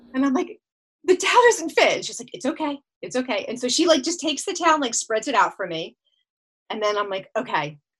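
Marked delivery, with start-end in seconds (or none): 1.0-1.9 put-on shrill, high, raised scream. Retelling a moment when a towel didn't fit: retelling own screaming. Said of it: "I'm screaming".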